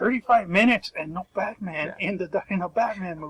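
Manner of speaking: hushed half-whisper under the breath. Retelling a remark made during the movie: imitating a half-whisper. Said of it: "I whispered to him".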